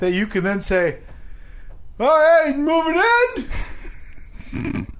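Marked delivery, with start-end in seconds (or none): 2.0-4.9 very high, slow, dopey dumb-guy voice. Act out the other speaker talking to his neighbors in a put-on dumb voice. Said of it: "I like how I talk like that".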